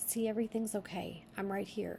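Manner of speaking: plain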